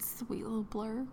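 soft, tender whisper.

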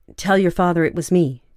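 plain reading voice

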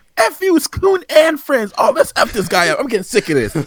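very high, loud, swooping angry rant. Speaker retells how the character got angry during the game; angry Cartman impression. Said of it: "Cartman was getting so pissed".

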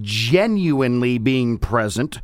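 genuinely drawn out, slow, heavy and emphatic. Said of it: "emphasis on the word genuine".

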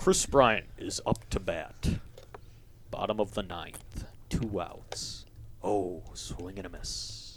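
play-by-play ballpark baseball announcer voice. Complimenting a guest's radio voice, then demonstrating a baseball announcer voice. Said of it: "I could see you at a baseball game just like being like".

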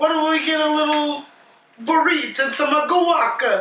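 high, put-on Italian accent. Imitating a movie character ordering Mexican food: Italian-sounding accent. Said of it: "He sounds really Italian when he does".

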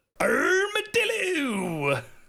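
very high, slow, shouted funny voice. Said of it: "Everyone say armadillo in a funny voice".

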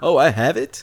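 imitated surprised tone. Mocking another speaker who acted as if it was news: imitating surprised question. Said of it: "as if, like, this was news to you".

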